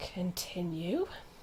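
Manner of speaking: low, menacing, barely breathed, very quiet mutter. Playing a character speaking under her breath: menacing voice under her breath. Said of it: "just under her breath, in the most dangerous voice you've ever heard".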